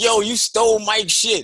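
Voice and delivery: put-on yelling. Recounting a man confronting him in a doorway in the morning, retelling a yell. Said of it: "he was yelling at me like".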